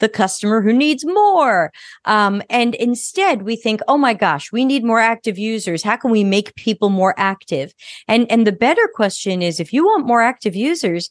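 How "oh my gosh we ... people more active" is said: usual speaking voice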